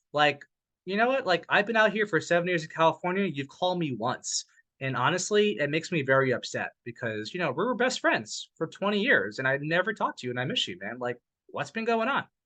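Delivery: ordinary delivery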